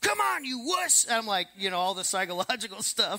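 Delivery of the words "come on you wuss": shrill yell pitched way up high. Recounting his first long run, the speaker acts out yelling at himself at mile ten. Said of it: "I'm literally yelling at myself".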